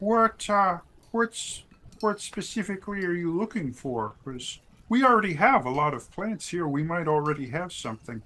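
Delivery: cartoon frog puppet voice. Asking someone who wants to cultivate plants what they are looking for, in Kermit the Frog voice. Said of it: "I don't know why she turned into Kermit the Frog".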